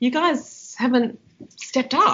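mock calm, disappointed scolding tone. Retelling telling off the boys for not stepping up: imitating calm angry scolding. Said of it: "But in a very calm way".

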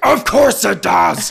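very loud, rasping, demonic bellow from deep down. Retell Vicky's answer to Megan about Christianity, bellowing in a Beelzebub voice. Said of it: "Vicky then bellows in her best Beelzebub voice".

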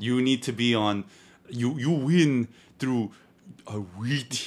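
put-on Japanese accent, deliberately drawn out, slow, high. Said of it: "don't do the accent".

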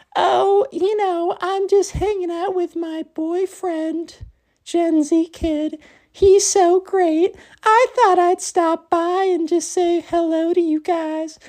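very high, unconvincing put-on girl voice. Retelling what a girl said to the group, in a bad girl's voice. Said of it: "It's not a great girl's voice".

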